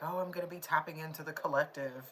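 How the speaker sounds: ordinary delivery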